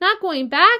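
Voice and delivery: alarmed, very loud, high outcry. Leaping to his feet after his friend says she won't go back, crying out. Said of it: "he cried".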